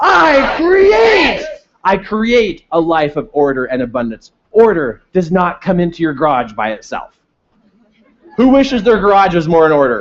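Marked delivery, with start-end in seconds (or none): 0.0-1.4 super powerful, eager, mighty, very high-pitched voice. Leading an affirmation with a thunderstorm image, super powerful. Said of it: "it's super powerful".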